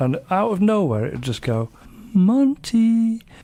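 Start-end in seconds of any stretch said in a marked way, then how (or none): 2.1-3.2 put-on high, loud girl's voice. Retelling how it called out from its perch: girl's voice. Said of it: "in a girl's voice".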